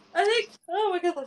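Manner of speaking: talking through a yawn. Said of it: "sorry, I keep yawning".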